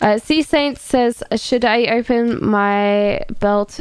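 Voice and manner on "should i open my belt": plain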